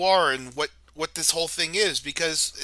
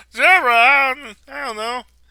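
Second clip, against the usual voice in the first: put-on whiny sitcom voice, higher and louder; 7 semitones higher, 8 dB louder than usual. Joining in the imitation of the same voice: Ray Romano voice. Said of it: "It sounds like Ray Romano".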